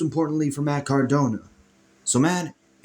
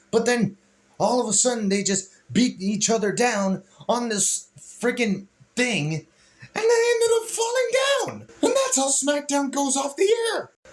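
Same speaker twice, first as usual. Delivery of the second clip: high voice breaking all over; 8 semitones higher than usual. Recapping how SmackDown went off the air, voice cracking. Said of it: "my voice is freaking cracking all over the place".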